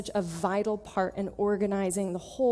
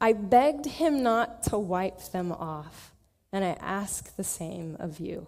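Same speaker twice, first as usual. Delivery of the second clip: choked-up voice catching, slow and swooping. Passing on a letter writer's request and asking the same: choked up. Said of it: "I get choked up".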